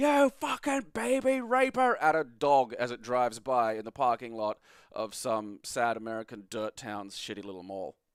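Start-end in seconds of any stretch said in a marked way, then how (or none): 0.0-1.9 very high, shrill, crazed screaming. Retelling how a man screamed at a dog driving by: imitating a man screaming. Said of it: "He's just screaming".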